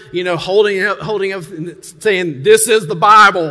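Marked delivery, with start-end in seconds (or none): 2.4-3.5 put-on booming North Carolina accent. Retelling a preacher holding up the Bible: Billy Graham North Carolinian accent. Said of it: "in that good North Carolinian, uh, accent".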